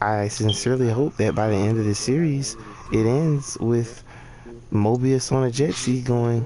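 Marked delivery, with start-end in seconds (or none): none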